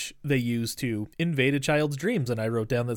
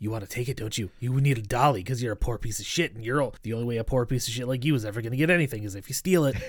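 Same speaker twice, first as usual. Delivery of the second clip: whispered put-on villainous voice; 2 semitones lower than usual. Describing a children's movie, the speaker acts out Pitch whispering in her ear like a psycho. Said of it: "he's whispering in her ear like a fucking psycho".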